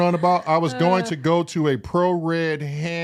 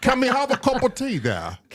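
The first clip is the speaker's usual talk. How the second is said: swooping, sing-song, pitched-up, laid-on British accent; 7 semitones higher than usual. Answering a request to do a British accent: British accent. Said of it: "Can you do your best British accent?".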